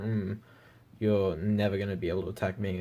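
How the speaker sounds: ordinary talk, nothing marked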